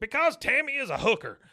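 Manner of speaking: sudden very loud, very high yell. Retelling a scene where Hank gets loud with Peggy, imitating Hank getting loud. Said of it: "And then he gets loud".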